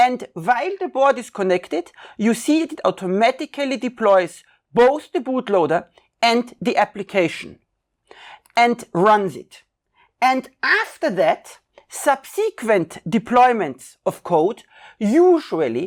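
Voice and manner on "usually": stress placed on the word 'usually'. Narrating a software tutorial to viewers, stress on usually. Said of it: "emphasis is on usually".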